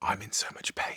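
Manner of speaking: whisper. Recalling a man who sat down in front of them at an event, retelling a whisper. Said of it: "he like whispered to me".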